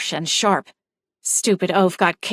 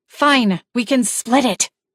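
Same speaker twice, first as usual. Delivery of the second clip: hissing through gritted, clenched teeth. Daisy, after thrashing and swearing with Alvin, hissing through gritted teeth. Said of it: "she hissed, through what sounded like gritted teeth".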